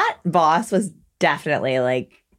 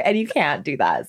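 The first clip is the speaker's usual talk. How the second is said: ordinary talk, nothing marked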